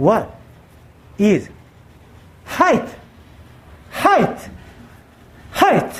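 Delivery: the word height repeated again and again. Recalling someone asking an English question, very slowly. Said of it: "그 사람이 이제 되게 천천히".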